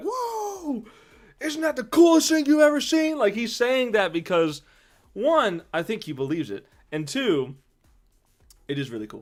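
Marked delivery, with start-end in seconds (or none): 0.0-3.2 put-on, very high, excited shout. Describing a character who pumps his fist: imitating Julian shouting excitedly. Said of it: "he's constantly pumping his fist and shouting".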